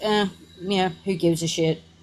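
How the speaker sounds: mock careless, indifferent tone. Mocking the other person's indifference while scolding them: mock careless shrug. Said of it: "you are just sitting there like".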